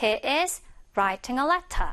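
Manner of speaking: slow, crisp British t in letter. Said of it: "이렇게 발음이 되겠죠".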